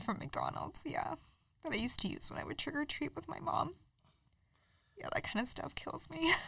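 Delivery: soft, tearful speech, crying through the words. Speaking with another person in front of listeners: crying while talking. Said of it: "sorry for crying guys".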